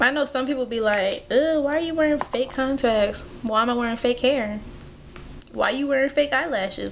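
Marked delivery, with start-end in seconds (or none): none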